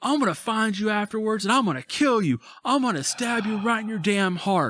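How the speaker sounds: acted-out enraged screaming, furious, very high. Telling a story about an angry man told to leave, retelling a furious yell. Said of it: "he's yelling at the top of his lungs".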